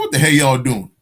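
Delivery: ordinary talk, nothing marked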